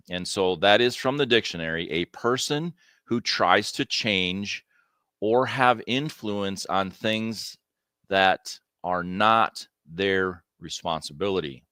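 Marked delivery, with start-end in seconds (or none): 1.9-11.5 slow, deliberate, carefully spaced, word by word. Reading a dictionary definition aloud to the audience; slow delivery. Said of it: "I say that slow".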